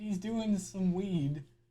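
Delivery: awkward, put-on casual tone, faking being cool. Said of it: "it sounded like an undercover cop trying to fit in with kids".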